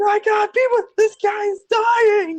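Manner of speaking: very high, shrill scream, pitched way up. Retelling a scene with Pikachu on a balcony, screaming as Pikachu. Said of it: "Pikachu's sitting there screaming".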